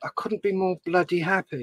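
plain

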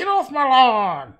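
put-on very shrill, very loud old man yelling. Retelling what an old man in a video game yelled: imitating an old man yelling. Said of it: "and he would yell at you".

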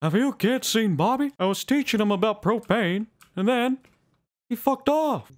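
very high-pitched animated-sitcom father voice. Switching from a Mario bit, the speaker sticks with a Hank Hill voice. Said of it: "I'm just gonna stick with Hank Hill".

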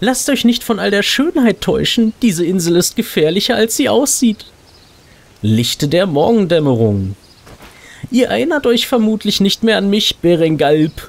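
nice elf lady voice. Reading a game's quest text aloud for the audience, voice the nice elf lady. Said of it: "Wir wollen mal dieser netten Elfendame, die uns hier in der Introsequenz so nett zugewunken hat".

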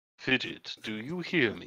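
very slow, very quiet, hushed whisper. Playing a character, turning to the homunculus on the shoulder: whispering in character. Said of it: "I'll whisper".

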